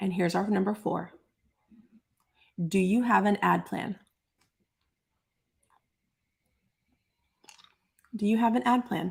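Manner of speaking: talking with cough drop in mouth. Presenting a numbered plan to an audience while sucking a cough drop, talking with a cough drop. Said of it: "I can't talk and have a cough drop in my mouth".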